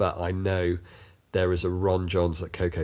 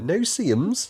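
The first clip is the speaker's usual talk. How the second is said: put-on Devon-accented voice; 12 semitones higher, 3 dB louder than usual. Retelling first hearing a bug's name, saying it in a West Country Devon accent. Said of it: "In that that tone as well".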